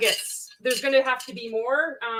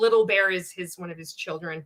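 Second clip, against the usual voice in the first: ordinary talk, nothing marked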